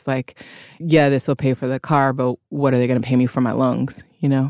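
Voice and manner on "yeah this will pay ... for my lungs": normal talking voice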